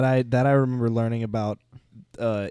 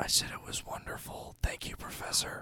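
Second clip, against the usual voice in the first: soft, unvoiced whisper. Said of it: "the professor comes and whispers in your ear".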